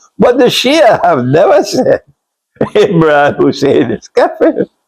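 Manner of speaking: talking with words broken up by laughter. Saying what the Shia have never said, laughing while talking. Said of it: "I'm sorry for laughing".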